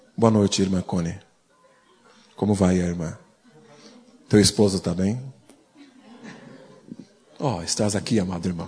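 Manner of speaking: grave, sober, low, solemn tone. Changing tone of voice to sound sober when greeting: sober, solemn tone. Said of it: "eu vou mudar o meu tom de voz e falar assim".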